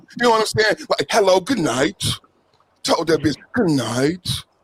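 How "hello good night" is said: sexy, deep, put-on gentleman Jamaican accent. Retelling how a man said good night to a woman, in a sexy deep Jamaican voice. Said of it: "in that sexy gentleman Jamaican voice, real deep".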